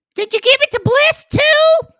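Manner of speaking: very high, loud, petty, snippy mocking voice. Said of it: "the first thing out of Henchman's mouth is".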